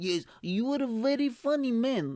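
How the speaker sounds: put-on hardcore Eastern European accent. Retelling a woman's praise after the gig: hardcore Eastern European accent. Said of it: "such a hardcore accent".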